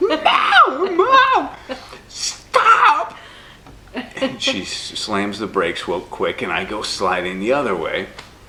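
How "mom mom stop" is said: very high, loud, screaming puberty voice. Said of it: "puberty voice".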